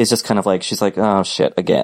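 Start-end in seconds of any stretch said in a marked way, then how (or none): 1.0-1.8 mock small, deflated, sad, disappointed voice. Acting out a character realizing she's alone again: imitating sad little disappointment. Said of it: "sad little disappointment".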